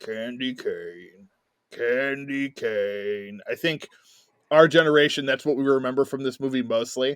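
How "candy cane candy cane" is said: creepy, sinister, low, very slow, drawn out. Describing an unseen evil trucker on CB radio: creepy Ted Levine voice. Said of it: "Ted Levine's creepy, you know, Silence of the Lambs voice".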